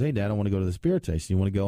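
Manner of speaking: normal talking voice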